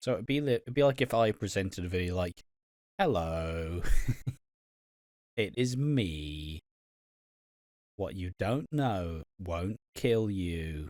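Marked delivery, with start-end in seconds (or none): 3.0-10.9 very slow, obnoxiously weird narrator voice. Mocking how these videos sound, presenting as if in one: obnoxiously weird, off-putting voice. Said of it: "obnoxiously weird, off-putting voice".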